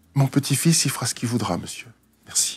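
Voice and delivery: tiny, small, soft little voice. Retelling what a woman told a man to end their exchange, imitating a small little voice. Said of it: "elle lui dit avec sa petite voix".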